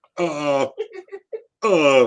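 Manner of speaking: panicked voice. Retelling being questioned about eaten ice cream: imitating own panic. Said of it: "I'm in a panic".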